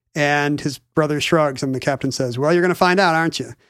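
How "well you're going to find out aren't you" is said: put-on Boston accent, much faster pace. Retelling a story, voicing the captain's reply in a boston accent. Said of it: "is he talking like he's from Boston?".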